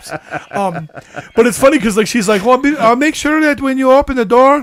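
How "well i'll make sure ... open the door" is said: bad put-on Eastern European accent, higher, faster. Quoting a woman's instructions, in a bad Eastern European accent. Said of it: "I can't do an Eastern European".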